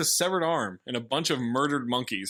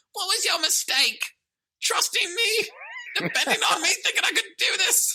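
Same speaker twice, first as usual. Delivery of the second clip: very high squeak, pitch swinging up and down. Recapping a film scene after Cypher takes responsibility, squeaky Jaden impression. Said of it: "Jaden squeaks again".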